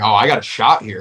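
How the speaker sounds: ordinary talk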